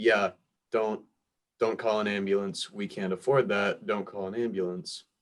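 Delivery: plain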